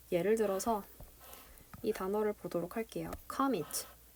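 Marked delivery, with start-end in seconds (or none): 3.3-3.9 commit with first syllable com stressed. Teacher explaining English word stress reads the example: stress on com in commit. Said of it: "커에다가 강세를 줬다".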